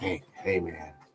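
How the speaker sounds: put-on quiet whisper. Retelling quietly telling off a worker in the corner: imitating a quiet whisper. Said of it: "I'd quietly whisper to them in the corner".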